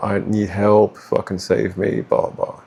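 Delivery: mock woe-is-me self-pitying tone. Speaker mimics a manipulative narcissist playing victim, mocking woe-is-me plea. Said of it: "the woe is me".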